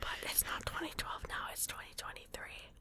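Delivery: soft, hushed whisper. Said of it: "listen to your whispering".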